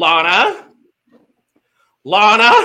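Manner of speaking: urgent, repeated name climbing in pitch each time. Showing how the speaker would urge Lana on: calling Lana with rising pitch. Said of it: "with increasing pitch in my voice".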